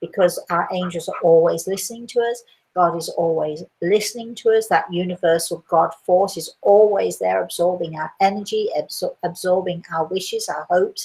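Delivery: plain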